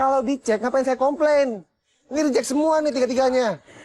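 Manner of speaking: furious, angry, heated delivery. Customer complaining to a seller in a scene: shouting. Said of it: "nggak usah teriak-teriak".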